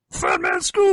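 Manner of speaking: loud, very high, belted-out call. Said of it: "do [name] as a character".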